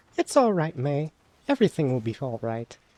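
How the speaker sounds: reassuring, soothing character voice. Voice acting game characters, one reassures May: voicing Hannah, comforting. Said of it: "I have to get ready to voice act".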